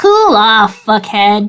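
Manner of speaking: rude, jabbing talking-rock voice. Voicing a pet rock that insults a player: voicing Stern the barnacle rock. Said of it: "you hear Stern go".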